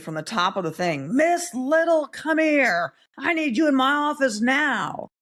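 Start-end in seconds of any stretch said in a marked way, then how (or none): 1.1-4.9 play-acted very high, drawn-out yell. Retelling a professor calling from the top of the stairs: imitating a professor yelling. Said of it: "she starts yelling at me".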